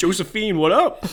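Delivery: mock American voice. Joking about the film's Napoleon in torn jeans: stereotypical American Napoleon. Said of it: "stereotypical American, uh, uh, dialogue".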